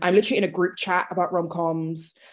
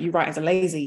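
terrible put-on voice, unhappy and dissatisfied. Retelling a friend's complaint about the author's answer: terrible impression of a friend. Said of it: "that was a terrible impression of you".

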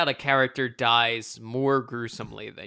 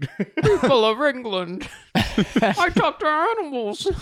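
put-on mumbling movie-star voice; 12 semitones higher, 5 dB louder than usual. Speaker imitates the voice from Doolittle: Robert Downey Jr. Doolittle voice. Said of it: "Robert Downey Jr.'s voice?".

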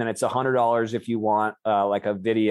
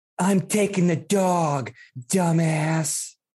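high, slow film-heroine voice, every word drawn out; 7 semitones higher than usual. Doing a line for the other speaker: Legally Blonde woman voice. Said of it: "Fucking Legally Blonde woman".

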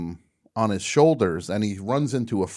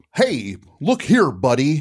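loud, high Midwestern American voice, over-enunciated; 5 semitones higher, 5 dB louder than usual. Imitating a Monty Python actor doing an American: Graham Chapman's American guy voice. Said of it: "when he's doing his American guy".

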